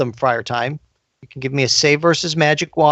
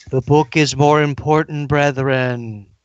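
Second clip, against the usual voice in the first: distant voice, sounding from very far off. Game narrator voicing a call heard from very far away, a voice from far away. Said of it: "a voice that seems to be coming from very far away".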